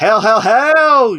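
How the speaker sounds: loud, slow, belted "hell" with every one stretched. Answering a question about playing later: sounding like The Rock. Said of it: "you almost sounded like The Rock".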